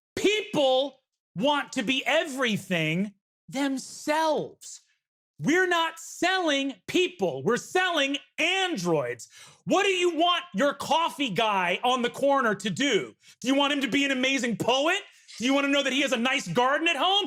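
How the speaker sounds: slow, furious, angry lecturing rant. After kicking a chair over, the CEO looks around at the room: angry CEO rant. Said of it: "You see the CEO just kicks a chair over and looks around and says, / he looks around and says, / You see the CEO just kicks a chair over and looks around and says".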